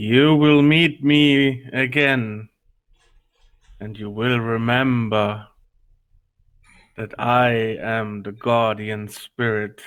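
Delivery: loud, resonant booming voice. Voicing a guardian spirit speaking before stepping through a portal: booming voice. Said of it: "again in his booming voice".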